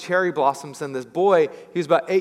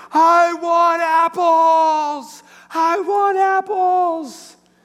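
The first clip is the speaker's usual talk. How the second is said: put-on child's scream, very high, loud, very slow; 13 semitones higher, 6 dB louder than usual. Retelling how a crying boy screamed at a cherry tree: imitating a child screaming. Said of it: "started screaming at the tree".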